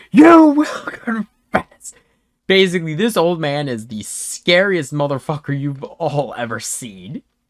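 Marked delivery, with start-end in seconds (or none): 0.2-2.0 high, slow, loud scream. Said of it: "he screams".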